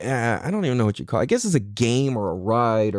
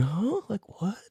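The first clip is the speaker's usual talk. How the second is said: put-on high, hushed, bewildered little-kid voice. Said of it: "feeling like a little kid".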